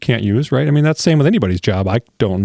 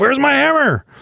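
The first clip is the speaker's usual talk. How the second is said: mock shrill, very high shouted yell. Recalling an old timer on a job site, retelling a yell. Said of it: "And he yells".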